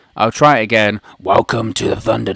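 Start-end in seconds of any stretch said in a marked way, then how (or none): 1.2-2.3 rough, creaky, rasping voice. Opening the Thunderdome as in the wrestling show: Vince McMahon impression. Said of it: "Last time I did a Vince McMahon impression".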